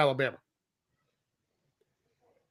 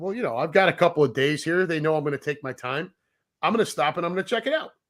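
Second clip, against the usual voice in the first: ordinary talk, nothing marked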